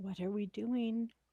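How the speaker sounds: barely-there, soft, hushed half-whisper, in character. Voicing a character in a hiding party: half-whispering in character. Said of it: "She's gonna whisper".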